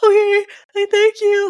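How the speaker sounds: very high, loud blubbering through sobs. Retelling how she answered him back then, imitating ugly crying. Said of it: "Like crying, guys, like ugly crying".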